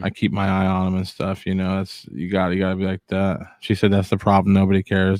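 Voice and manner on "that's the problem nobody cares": ordinary talk, nothing marked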